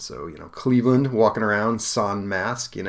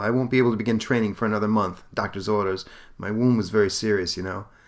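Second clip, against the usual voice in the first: usual speaking voice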